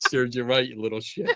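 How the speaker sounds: put-on laughing while talking. Retelling own reaction as a mummy after scaring a kid: imitating own giggling. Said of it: "I'm giggling like".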